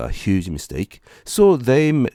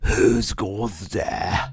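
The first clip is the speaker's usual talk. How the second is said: husky, hoarse, ghostly and spooky voice. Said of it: "with a hoarse voice like mine right now".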